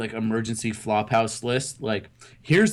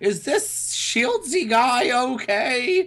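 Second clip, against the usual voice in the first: put-on old woman voice, higher; 13 semitones higher than usual. Retelling a phone call from the grandma, imitating the grandma's voice. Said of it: "that impersonation".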